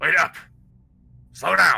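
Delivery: gruff, rough, very loud shout. Game master voicing someone shouting from behind the players: gruff shout. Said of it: "You hear a gruff voice from behind shout out".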